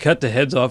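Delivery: plain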